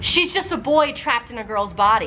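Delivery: plain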